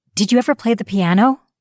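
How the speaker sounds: fast, high-pitched, impulsive blurt. Jenny, sitting with him at the meal, suddenly asks him, blurted out. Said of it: "she blurted".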